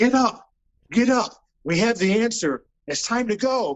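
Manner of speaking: play-acted high yell, stretched out and drawn out. Retelling yelling at headstones while walking through a cemetery: reenacting own yelling. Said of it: "I'm yelling at these headstones".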